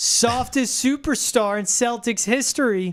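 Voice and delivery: snide sarcastic tone. Reading an all-caps caption firing back at someone calling him soft: sarcastic tone. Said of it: "so it gives you the sarcastic tone, like".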